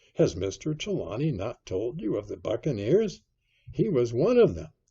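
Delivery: plain reading voice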